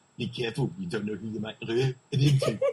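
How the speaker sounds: put-on loud, convincing South African accent. Quoting an actor's hilarious line from a movie, in a good South African accent. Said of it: "that was a good South African accent".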